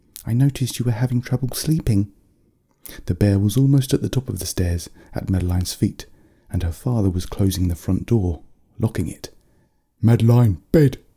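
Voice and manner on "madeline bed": loud yelling. Madeline's father orders her off as a bear nears the stairs' top, yelling. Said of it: "He yelled".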